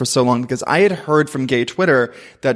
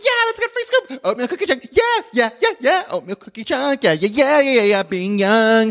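put-on manic teen excitement, higher pitched; 11 semitones higher than usual. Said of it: "how much energy you have as a teenager".

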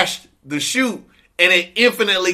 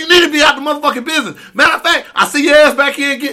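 acted, high-pitched, full berating tirade; 8 semitones higher, 4 dB louder than usual. Retelling how he answered a request for training, imitating someone letting a man have it. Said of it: "He was letting him fucking have it".

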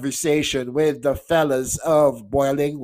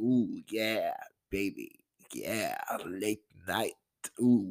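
very soft, low, hushed put-on sensual murmur; 6 semitones lower, 10 dB quieter than usual. Speaker playing around with the show's format, going for late night; mock sensual voice. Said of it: "try to sound all nice and sensual".

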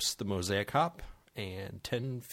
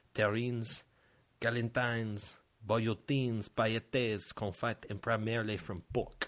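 clumsy, terrible put-on French accent. Finishing a cooking definition during a beer tasting, in a terrible french accent. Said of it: "I'll stop with my terrible French accent".

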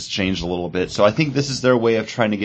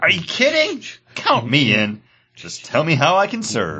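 high, swooping, dramatic comic-book style reading; 6 semitones higher than usual. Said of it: "a dramatic reading from Final Crisis".

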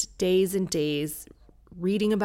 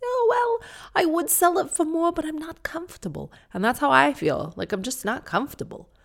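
put-on very high, sing-song, swooping New York accent; 9 semitones higher than usual.

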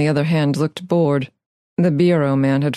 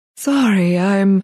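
wheezy voice, wheezing through the words; 4 semitones higher than usual. Narrator voicing her apology after she kicks the table, wheezy voice. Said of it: "she offered in a wheezy voice".

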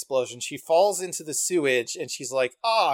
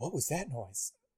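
very quiet, hushed, grave, serious horror-film delivery; 3 semitones lower, 14 dB quieter than usual. Retelling an anime scene where a character hears a noise: serious horror-movie line. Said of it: "it framed very horror movie".

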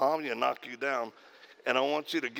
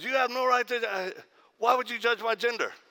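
put-on rising voice, getting louder, higher; 10 semitones higher than usual. Retelling a confrontation with a man, retelling someone getting louder. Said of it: "he starts getting louder and louder".

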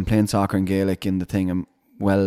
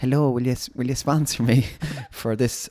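mock shy, timid, high, stumbling, hesitant voice; 5 semitones higher than usual. Retelling knocking on a door fundraising: imitating own timid asking. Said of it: "I went timid".

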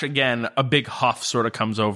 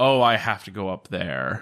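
line sighed out heavily and wearily; 3 semitones lower than usual. Voicing a character reluctant to go upstairs: sighing. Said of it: "kind of sigh".

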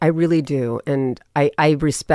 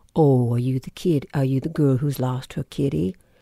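put-on sweet, kind voice; 3 dB quieter than usual. Retelling what a big man on the street said: imitating a sweet voice. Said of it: "And his voice was so sweet".

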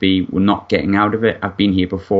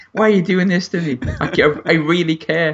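very high-pitched fake blubbering and sobbing; 10 semitones higher than usual. Imitating Jason Steele walking back down the stairs: mock crying as Jason Steele. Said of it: "Crying on the way back down the stairs".

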